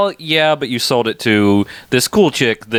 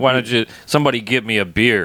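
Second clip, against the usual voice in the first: put-on sarcastic tone. Describing a scene, the speaker retells a character's request in a mock-sarcastic way. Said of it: "being sarcastic".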